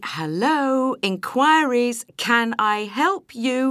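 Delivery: slow, pointed, high, loud repeated words.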